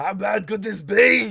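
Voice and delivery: slow, loud growl with an accent.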